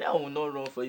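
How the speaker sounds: ordinary delivery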